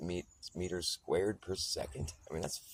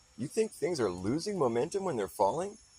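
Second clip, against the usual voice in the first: put-on incredulous, skeptical tone, high and raised; 8 semitones higher, 5 dB louder than usual. Retelling what someone asked in a mildly incredulous tone: imitating incredulous tone. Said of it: ""You gotta be kidding me" in his voice".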